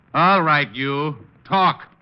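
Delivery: loud, slow, high-pitched yell. Ordering a pigeon in a box to talk: yelling at a bird. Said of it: "What are you yelling at that bird for?".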